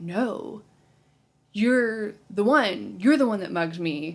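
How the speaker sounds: mock drunk, angry female voice. Retelling a movie scene where she accuses him: imitating a drunk, angry woman. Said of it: "drunk and she's angry and she's like".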